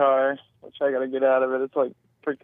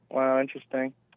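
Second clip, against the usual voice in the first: mock flat monotone, quieter; 5 dB quieter than usual. The speaker mimics a listener's unconvinced reply in a flat monotone. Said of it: "He says in a monotone voice".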